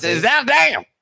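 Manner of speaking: put-on American Southern accent. Attempting to pronounce Zaandam, in a Southern American accent. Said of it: "With a Southern American accent".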